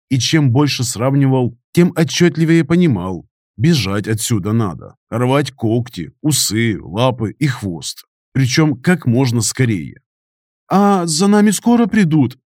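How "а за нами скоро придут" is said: scared, fearful, frightened voice, pitched up. A voice from a distant prison cell calls out, frightened. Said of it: "испуганный голос".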